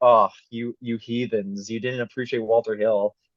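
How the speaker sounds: ordinary delivery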